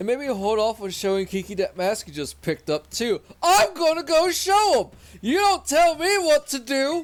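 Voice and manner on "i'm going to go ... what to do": put-on very high, shrill, drawn-out yell. Voicing a game character who refuses to keep a secret: yelling in character. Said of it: "Sorry for the yelling".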